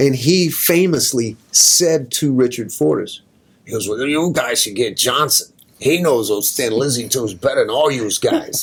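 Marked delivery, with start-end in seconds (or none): 3.9-8.6 tough, badass East Coast accent. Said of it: "with his badass East Coast accent".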